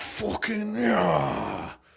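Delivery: raspy, high mauling tiger growl, "yeah" stretched. Answering a request for a best mauling impression: mauling impression. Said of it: "What's your best mauling impression?".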